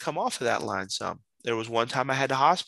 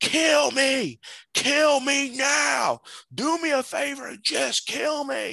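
acted, very high and very slow drawn-out shriek; 12 semitones higher than usual. Retelling how a man with a box cutter screamed in his face, imitating him screaming. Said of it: "started screaming".

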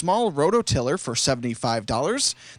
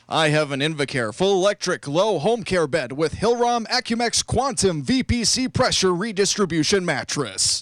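slow put-on radio announcer voice. Reading out a long product description of a bed: put-on radio voice. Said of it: "Best radio voice I can do right here".

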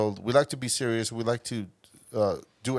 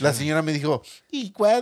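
taunting squeak, pitched very high; 5 semitones higher, 5 dB louder than usual. Imitating how someone mocks people: imitating a mocking voice. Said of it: "he mocks people like that".

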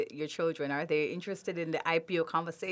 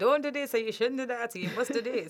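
put-on Jamaican woman's accent, higher pitch; 6 semitones higher than usual. Asking whether she gives advice, voicing an example; Jamaican mom accent. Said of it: "I'm speaking like a Jamaican mom".

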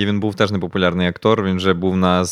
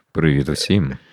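sultry seductive put-on voice, much lower; 4 semitones lower than usual. After others suggest it, a speaker tries it out, in a seductive erotic voice. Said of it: "таким еротичним голосом почати говорити".

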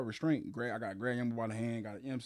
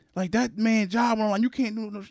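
put-on angry scolding, higher and louder; 8 semitones higher, 7 dB louder than usual. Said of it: "cursing him out".

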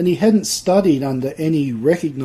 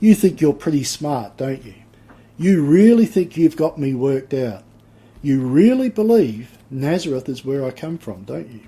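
mock sarcastic tone. Acting out how Jesus might answer the people: acting out sarcastic line. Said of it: "does he say it a bit sarcastically".

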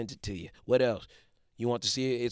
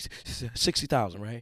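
mock tentative, hesitant, unsure, unconfident tone. Recalling early attempts to sell a house to an investor: acting hesitant, unsure. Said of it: "I wouldn't say it confidently. I wasn't confident in myself. I was hesitant".

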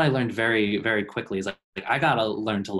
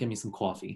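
Long Island accent, quieter; 8 dB quieter than usual. Showing off an accent for a co-host, Long Island accent. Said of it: "That sounded like my".

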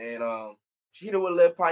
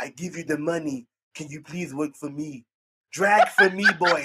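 mocking imitated wrestler voice; 3 dB louder than usual. Retelling how Andrade begs a wrestler to work for him: imitating Andrade. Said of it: "That's exactly what he sound like".

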